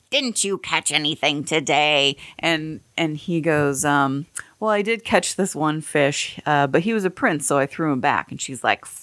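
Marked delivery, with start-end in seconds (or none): 0.1-2.1 put-on nagging, complaining housewife voice. Telling a story, the man's wife questions him as he comes home; imitating the wife's voice. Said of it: "She has this voice like this".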